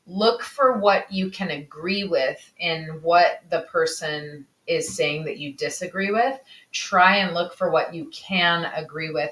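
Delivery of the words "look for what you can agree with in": plain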